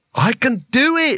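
shrill, very drawn-out, very high wild cry. Reading a story aloud, a wizard totters off down an alley, shouting wildly. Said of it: "he shouted wildly".

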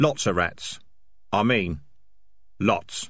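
plain reading voice

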